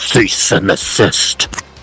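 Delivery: very heavily warped and distorted voice. Game master voicing what the players hear as they move across, very distorted voice. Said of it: "you hear in a very distorted voice".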